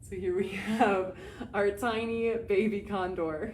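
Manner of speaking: talking through little giggles throughout. Narrator introducing a tiny baby condor to viewers, giggling. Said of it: "Sorry, I'm giggling".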